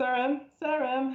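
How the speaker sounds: screaming. Trying to reach someone who may be too far to hear, screaming a name. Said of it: "I'm just gonna scream his name".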